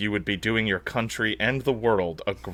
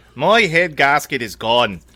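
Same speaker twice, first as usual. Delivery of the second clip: put-on booming, very loud, slow, odd Irish accent; 4 semitones higher, 8 dB louder than usual. Doing a Conor McGregor impression of him talking: Conor McGregor Irish accent. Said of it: "He's got this weird Irish accent. I'm trying to do it".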